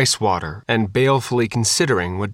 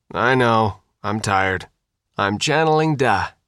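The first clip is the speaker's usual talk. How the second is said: plain reading voice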